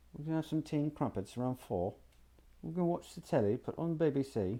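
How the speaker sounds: soft, put-on British accent. Explaining regional accents of english to listeners: a british accent. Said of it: "if you've ever heard somebody from Britain speak English".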